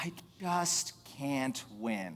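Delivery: soft, playfully fed-up, feigned joking exasperation. Retelling kidding around during a heated discussion among rabbinic students, in a mock exasperated tone. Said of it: "in a mock exasperated tone".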